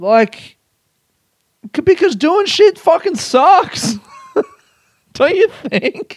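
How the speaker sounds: yelling through laughter. A speaker in a good mood, yelling and laughing. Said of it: "That's why I'm yelling and laughing so much".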